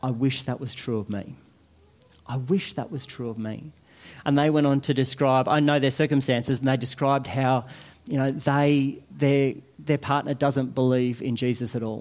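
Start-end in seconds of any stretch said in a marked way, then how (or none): 0.0-3.7 put-on whisper, quieter. Retelling what the person next to them leaned over to say, imitating someone whispering. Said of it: "really lean over and quietly say".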